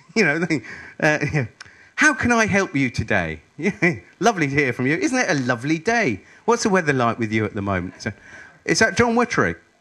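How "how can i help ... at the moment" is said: really pleased, glad-sounding tone. Speaker demonstrating how to answer when they phone, sounding really pleased. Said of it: "always sound like you're really pleased to hear from them".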